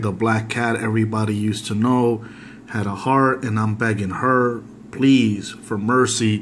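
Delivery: ordinary delivery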